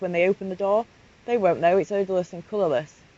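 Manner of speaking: ordinary talk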